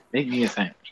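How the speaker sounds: ordinary delivery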